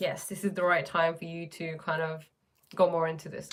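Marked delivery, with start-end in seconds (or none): none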